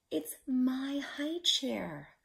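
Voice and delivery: high, slow, drawn-out half-whisper without voice. Peter answers his father, who asks him to help paint, in a half-whisper. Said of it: "whispered Peter".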